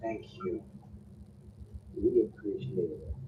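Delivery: whispered, breathy doubled voices in unison. Voicing a princess thanking the party: harmony of two voices. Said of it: "like a harmony of two voices".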